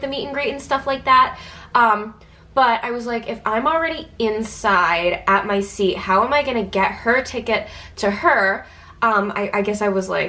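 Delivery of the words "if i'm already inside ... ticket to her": ordinary delivery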